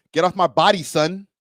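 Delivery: put-on New York accent. Giving their best try at a line, put-on New York accent. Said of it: "I'm gonna give my best New York accent".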